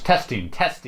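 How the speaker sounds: plain, normal speaking voice. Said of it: "Now say it in a louder voice".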